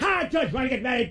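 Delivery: very bad put-on Scottish accent. Playing a character in an improv game, proposing to the judge, worst scottish accent ever. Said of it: "The worst Scottish accent ever".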